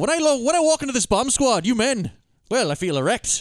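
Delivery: put-on high-pitched Irish accent. Imagining the actor's Hot Shots lines in Irish accent: imitating Lloyd Bridges in Irish accent. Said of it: "he should still do the Irish accent".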